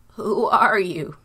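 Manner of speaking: loud, trembling, quavering, shaking voice. A trembling father asks who has come into his tent; shaking voice. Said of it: "In a shaking voice".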